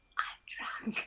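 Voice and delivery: hushed, whispered aside. In character, turning to Cecil and whispering to him. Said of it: "I turn and I whisper to Cecil".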